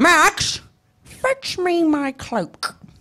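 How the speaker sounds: very slow character voice, each word stretched out. Doing a requested line as the Grinch: Jim Carrey Grinch impression. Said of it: "do it one more time".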